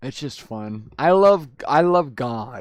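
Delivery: loud, drawn-out, mocking sarcasm. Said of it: "I say it in a sarcastic way".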